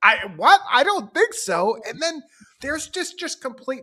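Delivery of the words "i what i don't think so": baffled, caught-off-guard, puzzled, lost-sounding voice. Retelling a film scene where Mitch gets flummoxed: imitating confused Mitch. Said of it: "a little confused".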